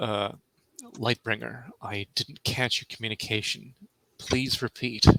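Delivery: quiet muttering under the breath. In character, quietly asking Lightbringer over the communicator to repeat: under the breath. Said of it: "under my breath".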